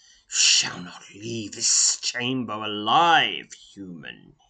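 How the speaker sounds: loud, hissing, menacing reptilian voice. The red-robed reptilian leader speaks to a human, hissing. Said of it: "he hisses".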